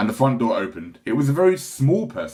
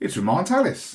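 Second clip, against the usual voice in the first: mildly surprised voice, pitched up; 6 semitones higher than usual. Reading a story aloud, the father looks up from a letter: rather surprised voice. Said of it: "he said in a rather surprised voice".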